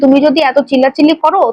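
plain

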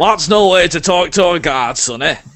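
stern, slightly angry, irritated guard voice. Voicing a guard who scolds a player for rude language: guard voice, slightly angry. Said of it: "He looks at you with a slightly angry look and says".

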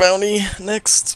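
talking through a yawn. Calling out the next bounty to the group: yawning while stretching. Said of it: "sound like you were stretching and yawning".

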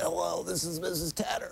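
mock sick voice with telephone quality. Radio host reading weather reports, mimicking a caller, imitating Mrs. Tanner's sick voice. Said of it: "your telephone voice needs a lot to be desired".

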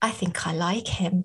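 sultry voice. Talking about a listener called the Ace: sultry. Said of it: "That was rather sultry".

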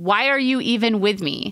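ordinary talk

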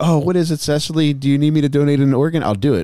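high-pitched hollering. Retelling how dad reacted to the TV news: imitating dad yelling at the TV. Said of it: "my dad is yelling this at the T V".

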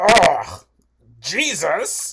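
very loud, swooping, offended, disgusted ugh, acted out. Retelling how offended people at a convention react: imitating offended passersby. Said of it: "what was that voice?".

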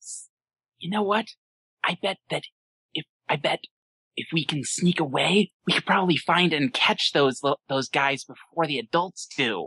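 hushed whisper in a put-on voice. Voicing a pony who leans in to the group: whispering in character. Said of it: "and tries to whisper".

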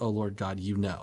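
normal talking voice

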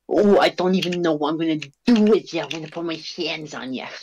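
angry, worked-up heavyweight boxer voice, threatening. Joking while playing with another speaker: Mike Tyson impression. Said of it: "I'm Mike Tyson".

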